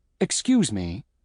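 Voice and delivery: ordinary delivery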